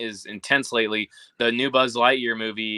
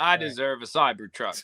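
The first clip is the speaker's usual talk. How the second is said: full-on, fake put-on American accent; 2 semitones higher than usual. Ranting about taxpayer-funded companies, in a put-on American accent. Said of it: "Now I sound really American".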